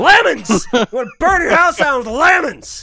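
very loud, shrill, high yell at full blast. Ranting about Power Rangers, the speaker slips into a Cave Johnson impression. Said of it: "I'm channeling Cave Johnson".

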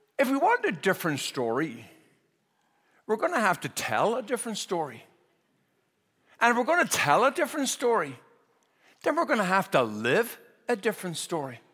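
put-on Northern Irish accent. Speaker quoting a man out of respect, in the man's own accent: Garrett Higgins' Northern Irish accent. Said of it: "I'm going to quote Garrett Higgins in his accent".

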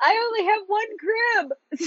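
high, tearful wail. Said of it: "And my mom starts crying".

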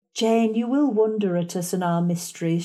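ordinary delivery

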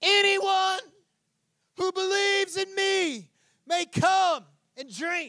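put-on projected shout. Retelling how Jesus stood up and called out to the crowds: imitating Jesus shouting. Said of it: "Jesus stood up and shouted to the crowds".

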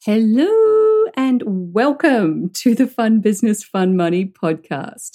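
hello stretched long. Podcast host welcoming listeners to the show, with a drawn-out hello. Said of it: "sometimes I like to draw out my words like hello".

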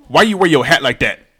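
put-on young woman voice. Retelling paying a young woman, the speaker quotes her question, imitating a young woman's voice. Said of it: "the way you said that was kind of funny".

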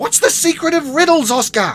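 very loud, very high shout. [name] shouts to her brother Oscar while he fights a spider. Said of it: "she shouted".

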